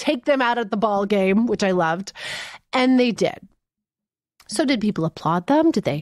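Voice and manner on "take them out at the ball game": usual speaking voice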